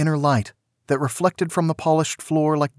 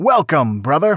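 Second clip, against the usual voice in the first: put-on heavy American accent laid on thick, raised voice; 5 dB louder than usual. Narrator reads a man welcoming the main character, in a thick american accent. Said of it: "a man said in a thick American accent".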